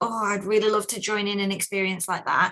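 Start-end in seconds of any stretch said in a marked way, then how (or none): none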